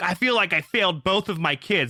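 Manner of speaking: put-on tearful crying voice. Retelling what a crying mother said to the speaker: imitating someone crying. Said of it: "crying to me".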